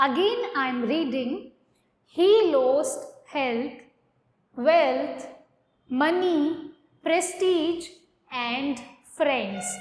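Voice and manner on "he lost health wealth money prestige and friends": short pause after health, wealth, money, prestige. Teacher reading a sentence to students, with a short pause after each list word. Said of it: "मैंने थोड़ा सा पॉज दिया है".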